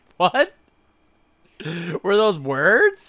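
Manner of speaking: high, loud, slow, incredulous bafflement.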